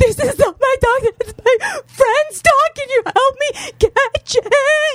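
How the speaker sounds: mock very high, sobbing shriek, scream-crying. Retelling begging a guy to help catch a friend's dog, retelling scream crying. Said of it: "I'm scream crying at the guy".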